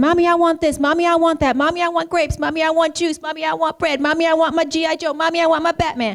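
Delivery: put-on toddler voice. A mother describes what her two-year-old son says all day, imitating a toddler's demands. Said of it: "He runs around saying".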